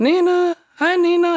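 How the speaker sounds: very high-pitched voice. Speaker retells greeting a scared dog that once bit them, really high-pitched voice. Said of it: "in this really high pitched voice".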